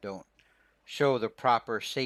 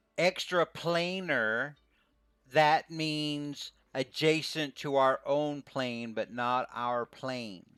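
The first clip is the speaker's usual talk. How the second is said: slow, condescending, pitched up, each word laid out; 5 semitones higher than usual. Voicing a character explaining a term to a player: slow, condescending talk. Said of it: "he kinda talks slowly like he thinks you're dumb".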